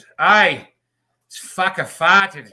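very loud, drawn-out, put-on Australian accent. Retelling what a stranger behind said at Disney, imitating an Australian accent. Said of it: "This fucking Australian guy behind me goes".

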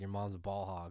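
plain

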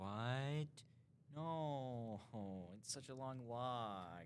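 put-on very slow, high, childlike voice, words drawn out. Retelling the reply to mom's order to walk to school, in a little kid voice. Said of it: "Your little, like, kid voice just gets me".

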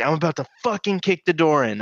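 put-on furious, threatening yelling. Retelling how their dad pounded on the door, imitating dad yelling. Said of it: "I can hear my dad yelling".

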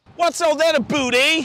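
purring comic Canadian accent, high and loud. Contrasting accents, following an american one with a mock canadian accent. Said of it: "the other harmonic purr of a Canadian".

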